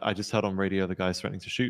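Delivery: ordinary talk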